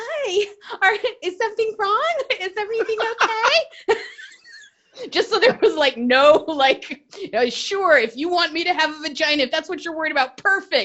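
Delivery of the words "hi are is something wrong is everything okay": really high, cartoonish put-on anime character voice. Recounting greeting the people sent to apprehend her, in a really high anime-character voice. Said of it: "I made my voice go really, really high".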